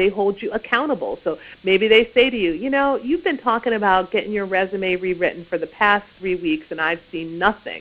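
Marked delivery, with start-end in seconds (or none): none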